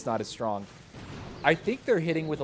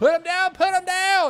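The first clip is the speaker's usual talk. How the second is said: very high, loud screaming; 8 dB louder than usual. Recalling a finish with seconds left, the speaker is retelling own screaming. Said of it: "was screaming".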